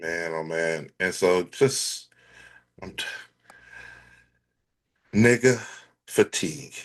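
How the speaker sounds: tired voice. Reacting to another speaker's plea, sounding fatigued. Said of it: "You sound you fatigued right now".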